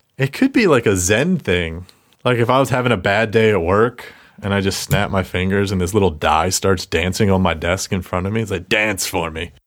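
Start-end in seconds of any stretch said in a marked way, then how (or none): 8.7-9.5 put-on lecherous voice, slower. Imagining a little die dancing on the desk, mock-lecherous Skies of Arcadia line. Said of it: "It sounded so lecherous".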